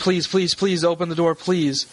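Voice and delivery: tearful, crying, desperate voice. A game master plays a distressed young woman at the door, crying and pleading. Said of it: "She seems she's crying and she's like".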